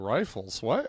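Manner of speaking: skeptical, doubtful, disbelieving tone. Retelling a guest being offered coffee: skeptical Bill Murray impression. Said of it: "he's skeptical".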